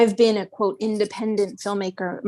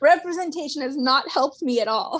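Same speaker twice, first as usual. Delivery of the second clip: words broken up by laughter, pitched up; 6 semitones higher than usual. Answering whether representation has helped, laughing while talking. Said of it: "I'm laughing when I say it".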